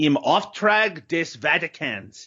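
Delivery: fluent, slow, native-sounding German, a bit angry. Trying out the movie's German title aloud: native-sounding German pronunciation. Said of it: "you sounded like you're a, a native German there".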